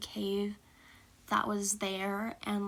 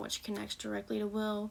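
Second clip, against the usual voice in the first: usual speaking voice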